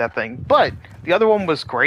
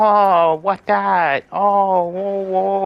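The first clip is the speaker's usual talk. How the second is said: put-on very slow, drawn-out babyish baby talk; 4 semitones higher, 3 dB louder than usual. Retelling how the other streamer sounded: imitating baby talk. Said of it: "baby talk the whole damn time".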